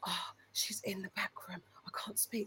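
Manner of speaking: very quiet whisper. Retelling what a man said down the phone: imitating a whisper. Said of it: "Man was whispering to me down the phone".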